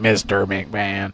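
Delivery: artificial voice, as if through a voice box. Recalling how Kane spoke through a voice box: Kane voice-box voice. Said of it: "or he'd use the voice".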